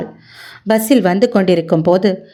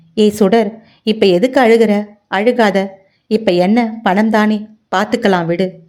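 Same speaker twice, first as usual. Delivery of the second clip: usual speaking voice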